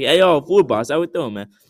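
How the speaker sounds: put-on Italian American accent. Retelling how they greeted Food Boss: imitating own put-on accent. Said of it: "the accent of my voice changed slightly".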